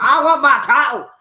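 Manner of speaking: put-on Scottish brogue, very high-pitched and very loud. Imitating a wrestler demanding his title back: imitating Finn Balor in a Scottish accent. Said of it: "why the fuck did I go Scottish?".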